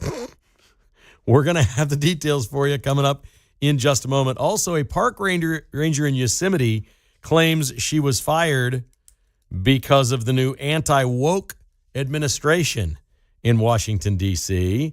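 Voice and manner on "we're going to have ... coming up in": words broken up by laughter. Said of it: "I can't get through it without laughing".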